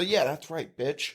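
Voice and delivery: soft, jokey mutter under the breath, mumbled. Retelling a taunt said at a passing car: muttered under breath. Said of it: "Under my breath".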